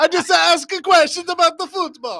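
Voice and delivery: put-on Italian accent. Joking about dodging someone yelling on the field: put-on italian accent. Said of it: "You just pull out an Italian accent".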